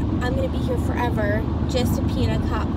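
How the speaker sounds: usual speaking voice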